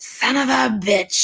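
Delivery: mock fed-up angry outburst, high, very slow, drawn-out. Retelling the waitress cursing out of customers' sight: imitating a waitress blowing up. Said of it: "she's like, blows up".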